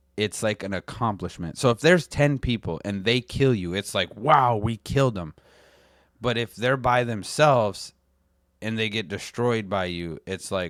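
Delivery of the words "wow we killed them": normal talking voice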